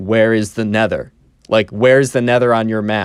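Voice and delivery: mock totally earnest, straight-faced, dead-serious deadpan. Telling a story, quoting the Minecraft kid's question to Cameron: retelling a deadpan question. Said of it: "The Minecraft kid is being one hundred percent deadpan".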